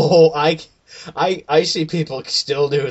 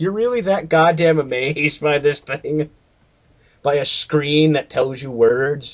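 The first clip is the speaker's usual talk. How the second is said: ordinary talk, nothing marked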